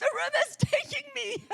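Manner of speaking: shrill, very high, very loud scream. Retelling a moment at the river when no one answered: retelling a scream. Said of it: "And I'm screaming".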